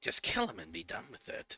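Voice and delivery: sinister, evil entity voice. Voicing a voice from flaming lips on a character's ear: evil entity voice. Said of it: "then the voice says instead".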